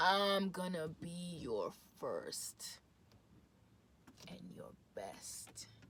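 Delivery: low, very slow, seductive whispered murmur.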